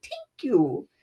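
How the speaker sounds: put-on tiny, soft, sweet little-boy voice. Retelling a boy thanking someone for a cracker: imitating Joe's little sweet voice. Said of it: "that little sweet voice".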